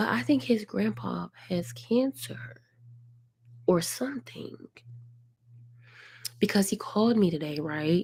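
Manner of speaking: quiet, voice kept down. Sharing private news while someone else might overhear: talking low. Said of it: "Imma talk low".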